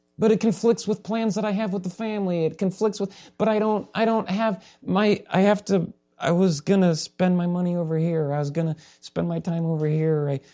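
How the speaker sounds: whiny, high-pitched voice. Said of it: "we're like".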